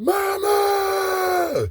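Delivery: very high, long, drawn-out wailing scream. Retelling two figures closing in, phone in hand, retelling screaming out 'Mama'. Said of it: "I started screaming out".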